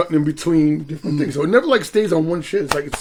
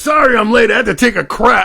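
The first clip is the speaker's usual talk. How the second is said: brazenly obnoxious, loud and pitched-up voice; 6 semitones higher, 6 dB louder than usual. Retelling a film scene where a character walks in late: imitating an obnoxious character. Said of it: "he's being all obnoxious".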